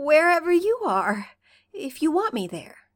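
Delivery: a little choked. Narrating a story, he answers while catching his breath, a little strangled. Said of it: "He sounds a little strangled as he says".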